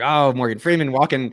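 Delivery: ordinary delivery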